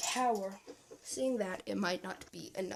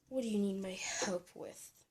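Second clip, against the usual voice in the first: put-on female witch voice; 3 dB quieter than usual. Voicing the witch answering another character, in a female witch voice. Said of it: "I have not really done a female voice before".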